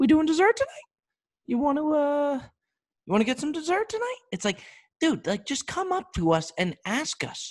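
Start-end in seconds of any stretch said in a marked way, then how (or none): 0.0-4.2 very high-pitched, unsure, hesitant voice. Mimicking how a waiter comes up to the table, imitating a waiter's high voice. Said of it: "Their their their voice gets all high".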